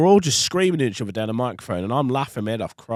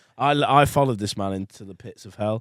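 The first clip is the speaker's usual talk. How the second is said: ordinary talk, nothing marked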